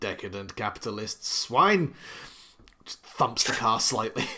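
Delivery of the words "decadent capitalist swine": sour, disgruntled, grumpy grumbling. Voicing Torin at the car door: grumbling. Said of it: "you can just kind of hear Torin kind of grumbling".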